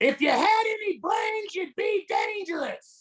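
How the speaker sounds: very high-pitched, belittling, cutting tone. A performer trying out an impression, imitating his dad. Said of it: "Let me get into character".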